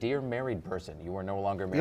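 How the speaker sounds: ordinary delivery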